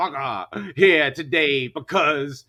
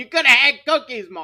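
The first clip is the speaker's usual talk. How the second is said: put-on high, shouted heckling yell; 7 semitones higher, 4 dB louder than usual. Retelling what he kept yelling at a show: retelling his own yell. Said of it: "I just kept yelling".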